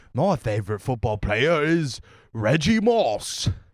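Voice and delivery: put-on British man's accent. Playing a character, a British guy who really likes America; British accent. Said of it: "a British guy who really likes America".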